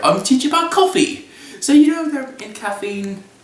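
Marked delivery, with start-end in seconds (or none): 0.0-1.3 put-on British accent, higher pitch. Retelling a vision in which a coffee expert visits: James Hoffmann British voice. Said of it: "He comes to me in his British voice".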